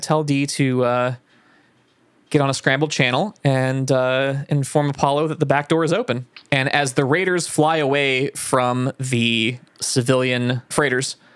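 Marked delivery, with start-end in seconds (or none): none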